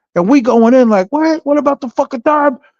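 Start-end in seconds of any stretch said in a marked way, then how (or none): 1.1-2.6 put-on screaming, pitched higher. Retelling an argument at an airport drop-off: retelling a screaming argument. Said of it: "fucking screaming".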